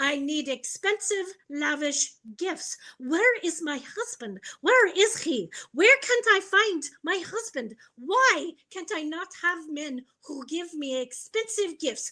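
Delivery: put-on Ukrainian accent in English. Retelling what a woman said to the speaker in the ER, put-on Ukrainian accent. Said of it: "she has a Ukrainian accent".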